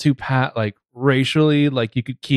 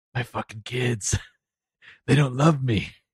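put-on New Jersey mob boss accent; 6 dB quieter than usual. Acting a line as a possible New Jersey mob boss character: put-on New Jersey mob boss voice. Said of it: "he's the New Jersey mob boss".

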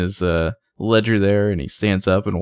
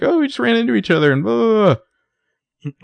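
very high, rushed, flustered, acted nervous babbling; 14 semitones higher, 3 dB louder than usual. Speaker retells a woman explaining to Jake why Ezra is there, imitating nervous explaining. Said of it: "nervously explain".

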